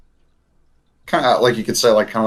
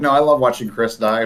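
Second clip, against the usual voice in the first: ordinary talk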